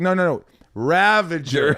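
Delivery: acted insistent, stretched-out yell. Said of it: "James Gunn, the director, is yelling at him".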